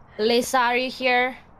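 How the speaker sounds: calling out, as if hailing across distance.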